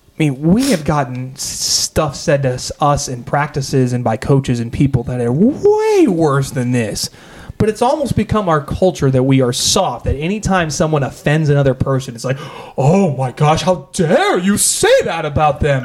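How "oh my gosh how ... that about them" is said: indignant, outraged voice like a stage vampire. Acting out people's reaction when someone offends another person, Dracula-like voice. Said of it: "i it sound like Dracula".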